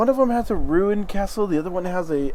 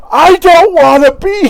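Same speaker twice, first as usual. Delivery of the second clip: shrill, drawn-out, very loud shout; 12 semitones higher, 16 dB louder than usual. Voicing the same character answering the players: yelling. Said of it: "She just yells it out".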